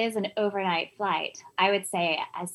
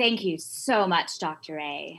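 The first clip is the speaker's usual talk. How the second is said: deliberately lowered, slowed-down voice; 3 semitones lower than usual. Redoing a thank-you after being told the voice was high: lower voice on purpose. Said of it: "Do you want me to do it again?".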